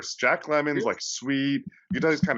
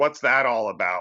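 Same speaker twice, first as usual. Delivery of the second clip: put-on cranky, grumbling old woman's voice. Retelling what an old lady on a bench asked: imitating a grumpy old lady. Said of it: "real grumpily".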